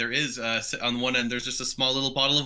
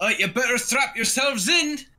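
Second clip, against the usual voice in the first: very high, shrill shouting yell; 12 semitones higher, 4 dB louder than usual. Voicing Drengar telling the passengers to strap themselves in: Drengar shouting. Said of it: "you hear Drengar shouting".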